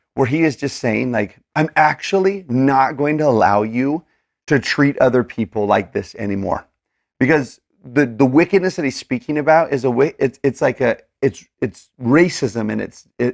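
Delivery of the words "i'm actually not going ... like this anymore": ordinary delivery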